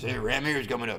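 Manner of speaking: silly, dim-witted, put-on dumb guy voice. Explaining engine RPM, switching to a joke voice: put-on dumb guy voice. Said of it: "Now I'm using my dumb guy voice".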